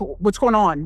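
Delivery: alarmed, panicked voice. Retelling the moment a friend's face turned pale: retelling own panicked words. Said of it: "And I'm in panic mode".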